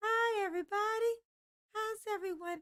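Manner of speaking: very high, put-on, girly feminine voice. Showing the chat how it would sound to talk this way: put-on feminine voice. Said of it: "how much fun would it be if I talked like this".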